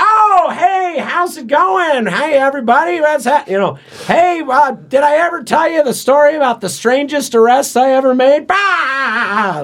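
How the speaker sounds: loud, blaring, very high-pitched dad voice. Describing his dad to listeners, imitating his dad's loud voice. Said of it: "my dad talks like that because he's been married to my mom for 38 years. And has gradually had to get louder".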